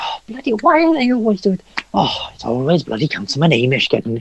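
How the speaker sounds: high, swooping, grudging, rambling grumble to himself. Voicing a councilman who shuffles off: grumbling begrudgingly to himself. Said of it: "begrudgingly sort of walks off".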